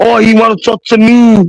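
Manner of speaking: stretched-out high scream. Retelling what was screamed downstairs at the scene: imitating Eli screaming. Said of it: "Eli was downstairs screaming".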